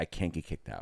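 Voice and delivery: gentle, emotional, pleading voice. Retelling how a woman with a net got upset, imitating her getting emotional. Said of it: "she gets into this like emotional".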